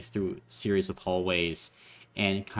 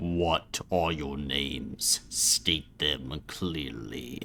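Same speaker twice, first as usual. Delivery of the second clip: deep, low voice as if through an intercom speaker; 5 semitones lower, 4 dB quieter than usual. Narrating a scene, the narrator voices a Vox system behind a door: deep voice. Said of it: "this deep voice says".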